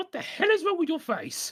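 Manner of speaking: high cartoon voice, swooping around. Recalling a funny cartoon scene, imitating Scratch. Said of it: "Scratch is like".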